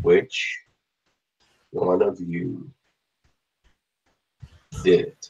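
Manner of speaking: metal-sounding voice. Narrator voices a metallic figure questioning the players: metallic sounding voice. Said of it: "in a metallic sounding voice".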